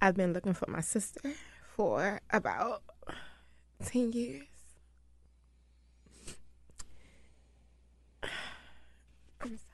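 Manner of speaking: near-whispered, breathy voice, holding back tears. Telling of years spent searching for a missing sister, holding back tears. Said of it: "I'm not gonna cry today".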